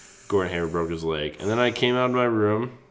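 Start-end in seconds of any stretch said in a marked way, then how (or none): none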